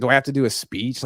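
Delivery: ordinary talk, nothing marked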